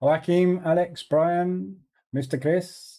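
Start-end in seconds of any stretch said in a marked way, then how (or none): 2.1-3.0 sudden Indian accent. Greeting viewers by name, saying one name in an indian accent. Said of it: "said that in an Indian accent".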